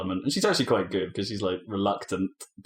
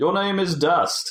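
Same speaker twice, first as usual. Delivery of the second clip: well-spoken, grand declaiming, very high and loud; 10 semitones higher, 5 dB louder than usual. Describing a game's talking sword Ara addressing Dust, in Ara's well-spoken voice. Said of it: "a very well spoken sword".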